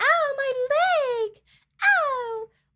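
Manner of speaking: very high, very slow, drawn-out scream. Retelling a scene where a character fakes injury: imitating Blair screaming. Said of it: "Blair starts screaming".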